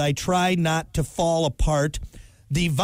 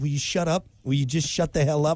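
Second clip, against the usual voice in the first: re-enacted calm swearing. Describing coming home after daycare pickup every day, retelling calm swearing. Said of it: "sworn at an animal just in a calm voice".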